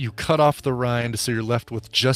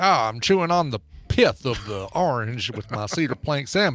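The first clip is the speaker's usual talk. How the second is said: put-on Southern gentleman voice. Acting out a diner who finds orange pith on the salmon plate: imitating a southern gentleman. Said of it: "They're just a southern gentleman".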